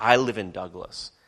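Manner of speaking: acted, put-on proud voice. Imagining a future youth of douglas speaking of home, acting out a proud voice. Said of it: "they'll have it with a proud voice".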